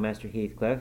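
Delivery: plain reading voice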